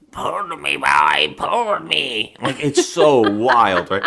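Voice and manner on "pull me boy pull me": slow, swooping, barely human ghoul voice. Retelling what a man said to a child, in an inhuman ghoulish voice. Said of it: "talking like a human anymore".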